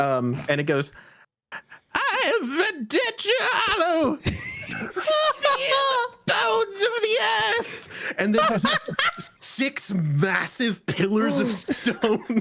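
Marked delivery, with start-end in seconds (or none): 1.9-8.2 tiny, very high shriek, sounding distant. Narrating a game scene as a character announces itself: tiny screaming voice. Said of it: "a very tiny, tiny voice, um, you just hear screamed over the wind".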